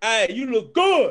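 acted-out shouted scream. Acting out a coworker calling to a woman at work: imitating a catcall scream. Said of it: "he just screamed her like".

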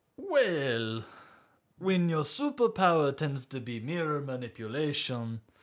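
put-on French accent, slipping in and out. Asked how they got into this business, answering in a put-on french accent. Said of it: "I'll have you know that [name] is French man that you could ever think of. Accent slips from time to time".

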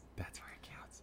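soft, unvoiced, echoing whisper.

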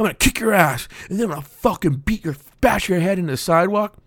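angry put-on macho voice. Joking about how straight guys talk when they get angry: imitating angry straight guys. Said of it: "straight guys get angry".

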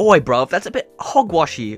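put-on British accent. Joking with friends about a silly article: mock british accent. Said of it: "making fun of all of our British viewers".

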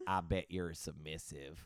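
put-on Southern accent. Retelling what an older coworker said at work, imitating his Southern accent. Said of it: "Southern accent".

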